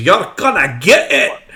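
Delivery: shrill, screeching, taunting screamed threat. Voicing a small creature darting between legs: screaming threat. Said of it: "just screams".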